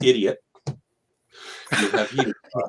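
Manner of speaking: mock calm, slow, soothing bedside-nurse manner. Retelling what the wife, a critical care nurse, said: imitating a very therapeutic manner. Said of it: "in a very therapeutic manner went".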